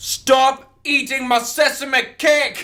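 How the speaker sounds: put-on piercing, very high, loud shrill yell. Recounting what a character said in a scene, retelling a shout. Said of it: "Now half a live stream's deaf".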